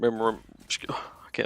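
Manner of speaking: whispered, slowed, mock choked-up voice.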